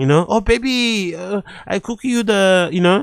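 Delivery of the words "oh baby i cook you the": exaggerated, played-up Spanish accent, very slow. Imagining someone playing up an accent at home: imitating Sofia Vergara accent. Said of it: "Maybe Slojo at home plays up her accent".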